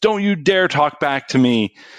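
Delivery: angry, shrill, top-of-lungs scream. Retelling how a teacher scolded a student: imitating a teacher screaming. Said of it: "she screamed at the top of her lungs".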